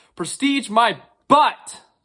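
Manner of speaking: heated, loud, angry shouting outburst. Reacting to a quoted argument the speaker calls stupid, angry yelling. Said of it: "Sorry for cursing".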